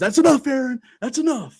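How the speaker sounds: very high-pitched, scolding umpire yell. Retelling how the home plate umpire yelled at the manager: imitating an umpire yelling. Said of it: "yells at Aaron Boone".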